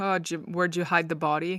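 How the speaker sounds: mock-jokey, teasing tone. Retelling how a drinking friend would ask about Hilka, acting out a joking question. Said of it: "Like kind of jokingly".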